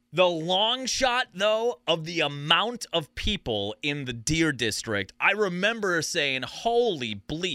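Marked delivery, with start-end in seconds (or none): none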